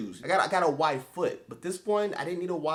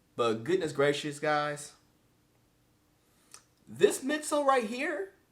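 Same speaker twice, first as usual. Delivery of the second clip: voice breaking and cracking on the words; 3 semitones lower than usual. Reviewing a running shoe's midsole for viewers, the voice cracking. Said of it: "did my voice crack?".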